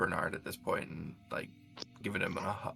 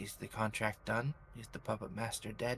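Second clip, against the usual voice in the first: whispered character voice; 2 semitones higher, 10 dB quieter than usual. Playing a character who hugs a friend, whispering in his ear. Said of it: "I will kind of whisper i-, in his ear".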